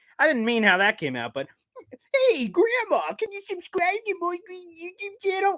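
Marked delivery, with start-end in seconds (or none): 2.3-5.6 failed put-on granny voice, very high and slow. A YouTuber tries out a voice for viewers: attempted grandma voice. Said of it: "grandma voice ... that's not even a grandma. I don't even know what voice happened there".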